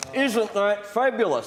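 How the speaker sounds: spoken through clenched teeth. Mocking an opponent's reaction to good news: imitating speech through gritted teeth. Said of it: "he was saying through gritted teeth".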